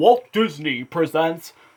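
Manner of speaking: grand, big, imposing announcer voice. Retelling a VHS opening announcement: imitating a big voice. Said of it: "there was this big voice that said".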